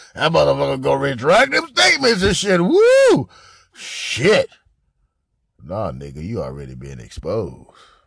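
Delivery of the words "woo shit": very high, loud, overjoyed whoop, acted. Commenting on a man's recording and mimicking his reaction: imitating someone's happy whoop. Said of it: "He happy as a motherfucker".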